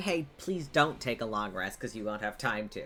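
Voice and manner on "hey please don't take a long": ordinary delivery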